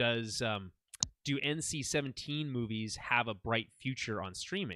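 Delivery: normal talking voice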